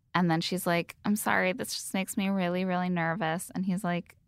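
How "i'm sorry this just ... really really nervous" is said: ordinary delivery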